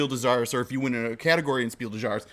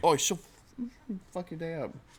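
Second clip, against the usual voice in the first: fake Cockney accent, much higher pitch; 6 semitones higher, 5 dB quieter than usual.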